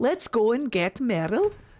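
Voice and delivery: bad, muddled, put-on Welsh accent. Talking to chat, slipping into a bad Welsh accent again. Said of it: "I did it again. That's not how the Welsh talk".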